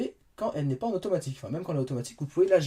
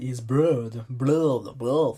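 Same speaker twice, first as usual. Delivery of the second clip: French-accented English, much lower and slower; 5 semitones lower than usual. Demonstrating the notification centre, giving the English word: French-accented English. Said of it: "avec mon super accent anglais".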